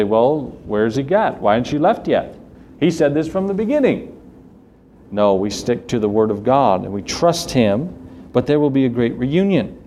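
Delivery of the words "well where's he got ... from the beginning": normal talking voice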